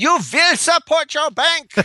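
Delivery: bad, very high, shrill, loud put-on German accent. Trying out the bank line the speaker considered doing, bad German accent. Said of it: "some type of a German accent".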